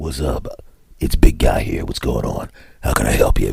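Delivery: deep, low, breathy whispered big-guy voice. Answering after being called big guy, deeper put-on voice. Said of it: "You get the deeper voice because somebody called you big guy".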